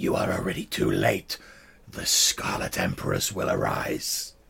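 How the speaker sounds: very low, creaky hiss under the breath. Voicing a clawed creature taunting a wounded player: monster hissing under its breath. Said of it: "it hisses at you under its breath".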